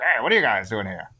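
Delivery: put-on old-time Prohibition-era gangster voice. Describing the henchman Invisible Tommy Gun, giving him a 1930s gangster voice. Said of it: "like, 1930s gangster".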